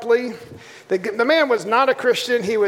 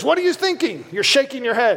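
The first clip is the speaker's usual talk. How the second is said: hard, harsh put-on German accent. Retelling how a man questioned him in the front row: harsh german accent. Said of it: "this guy with a harsh German accent goes".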